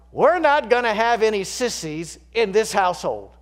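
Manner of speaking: play-acted, very loud, high-pitched, shrill, resentful angry outburst. Recounting a family argument, retelling Dad's angry, resentful outburst. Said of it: "Dad blurted out in an angry, resentful tone".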